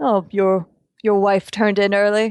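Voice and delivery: frightening put-on character voice. Game master, as Miller making the rounds, speaks to a seated guest in terrifying Miller voice. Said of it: "your Miller voice is terrifying".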